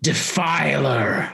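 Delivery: cold, chilling, icy high cry. Game master voicing a figure crying out at Altus: icy, booming voice. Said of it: "the icy, booming voice inside of your heads as she cries out".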